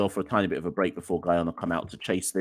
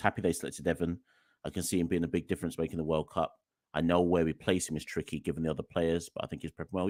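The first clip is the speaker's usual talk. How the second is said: ordinary talk, nothing marked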